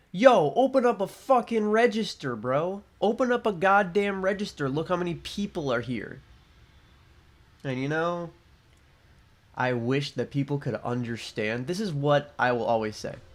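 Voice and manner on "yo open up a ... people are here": put-on, demanding, pitched-up yell. Retelling how a waiting customer yelled at them: imitating a customer yelling. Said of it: "he yells at me".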